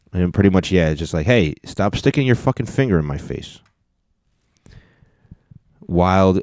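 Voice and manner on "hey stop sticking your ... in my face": ordinary delivery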